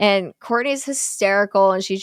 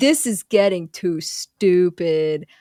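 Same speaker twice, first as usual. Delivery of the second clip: fed-up, very slow, drawn-out delivery; 2 semitones lower than usual. Retelling a movie scene, imitating t j's fed-up delivery. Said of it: "that's exactly how he says it too".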